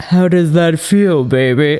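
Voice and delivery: groovy British spy character voice. Trying out a voice while others call for it lower, in an Austin Powers voice. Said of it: "Austin Powers".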